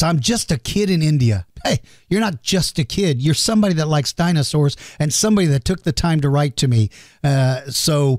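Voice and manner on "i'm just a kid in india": ordinary talk, nothing marked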